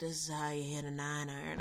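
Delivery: gentle put-on southern accent. Imagining a man standing over her showing how to hit a 9-iron, soft southern drawl. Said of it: "I want that soft southern drawl".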